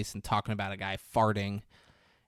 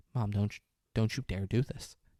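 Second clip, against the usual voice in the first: ordinary talk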